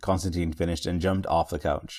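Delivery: plain reading voice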